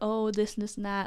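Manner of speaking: normal talking voice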